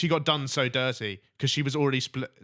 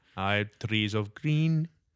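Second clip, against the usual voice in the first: put-on Mexican accent; 3 semitones lower than usual. Previewing new lyrics to a co-host, in a mexican accent. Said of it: "That's a bit Mexican there".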